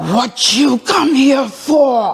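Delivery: put-on, forceful, pressing tone. Retelling what a woman asked after she turned around: retelling a forceful question. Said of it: "In a forceful voice".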